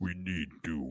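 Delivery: very deep, hushed, quiet demon voice. Showing another speaker how low the voice should go: deep demonic voice. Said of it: "You need to get down like".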